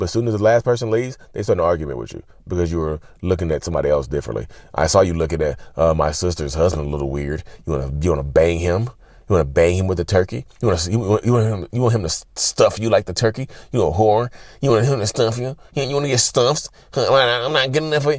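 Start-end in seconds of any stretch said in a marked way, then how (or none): 4.7-18.2 silly, accusing, jealous-sounding put-on voice. Acting out a narcissistic partner starting an argument after the holiday dinner: stupid voice, imitating accusing partner. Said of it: "this stupid voice I use".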